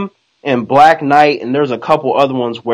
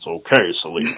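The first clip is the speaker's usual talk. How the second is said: very low, deep, soft, hushed scrungy voice; 8 semitones lower, 8 dB quieter than usual. Retelling Batman's reply to Selena in the comics: scrungy Batman voice. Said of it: "with his scrungy voice".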